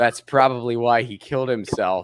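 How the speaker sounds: acted, dry, unbothered, flat, matter-of-fact deadpan. Retelling a guy's reply to a woman in a scene, retelling a deadpan line. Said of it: "matter of factly and deadpan just goes".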